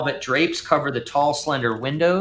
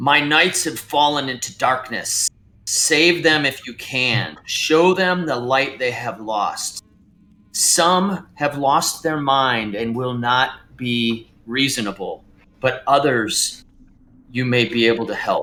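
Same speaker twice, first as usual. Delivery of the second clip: creature voice pushed out as a hiss; 2 semitones lower than usual. A storyteller voices a creature addressing the listeners, in a hissing creature voice. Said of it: "it hisses as it addresses you".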